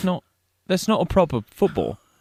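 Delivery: put-on English accent. On a podcast, a host performs a bit in a mock english accent. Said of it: "we just do an English accent for a while".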